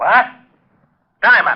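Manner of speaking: high-pitched shout. Reacting to news that a body was found: yelling. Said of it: "You better watch that yelling".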